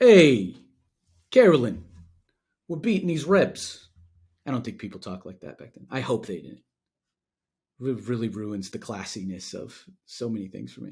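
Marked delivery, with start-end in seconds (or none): 0.0-3.9 very loud Brooklyn man voice. Joking about Civil War letters, voicing a Brooklyn guy in a Brooklyn accent. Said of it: "Where's the like Brooklyn guy?".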